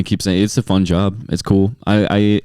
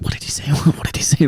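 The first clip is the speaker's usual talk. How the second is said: put-on whisper, higher pitch; 6 semitones higher than usual. Retelling how audience members asked each other about a joke: imitating someone whispering. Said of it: "whispering over to her".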